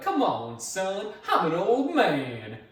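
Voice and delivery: very slow, high-pitched, swooping Cajun drawl. Quoting a character who taunts you while chasing you: Cajun accent. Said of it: "He's got that Cajun accent".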